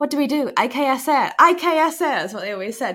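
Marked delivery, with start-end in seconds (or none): 0.0-2.0 put-on Spanish accent, very slow, drawn out, high. Imitating Spanish children talking about each other, in a put-on Spanish accent. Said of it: "Apologise for my Spanish accent there".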